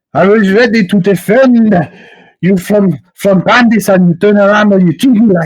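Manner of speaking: very high, loud, enraged furious screaming. Voicing an angry character in a tavern quarrel: Philippe screaming in anger. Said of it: "Philippe is screaming at".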